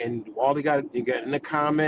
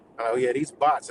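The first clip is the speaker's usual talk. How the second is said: usual speaking voice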